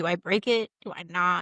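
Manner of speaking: usual speaking voice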